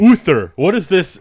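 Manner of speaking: cheesy put-on Danish accent. Trying the Danish accent again at another speaker's urging: cheesy Danish accent. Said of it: "His Danish accent's kinda cheesy".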